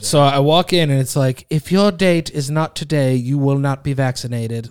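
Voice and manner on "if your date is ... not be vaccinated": mock robotic computer voice. Speaker retelling an automated announcement heard on walking in, in a robotic computer voice. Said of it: "computer voice".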